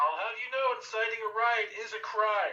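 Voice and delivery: very high, shrill, loud shouting. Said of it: "I'm gonna start shouting at the crowd".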